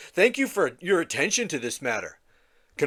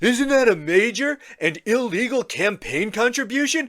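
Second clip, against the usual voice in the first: pitched-up, unhinged, deranged put-on voice; 5 semitones higher than usual. Reading a post aloud as its author: bad Trump impression. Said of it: "even if my impression isn't very good".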